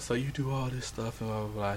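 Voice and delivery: flat, level, uninflected monotone reporter drone. Retelling an interview, imitating the reporter's questions: imitating a monotone reporter. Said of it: "real monotone".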